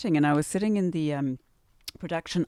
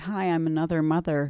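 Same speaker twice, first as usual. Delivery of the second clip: put-on American accent, trying hard. Recalling how she first greeted someone, in an attempted American accent. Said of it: "trying to do my American accent".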